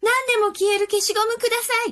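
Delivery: rapid, rattled-off, very high-pitched delivery. A girl bursts into the shop and asks the old man for an eraser: speaking rapidly. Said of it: "そして早口に言いました。".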